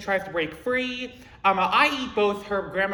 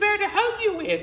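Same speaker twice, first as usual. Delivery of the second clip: put-on old-lady granny voice, pitched very high; 12 semitones higher than usual. Retelling a role-play scene, answering her questions in a granny voice. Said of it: "I use a granny voice to be like".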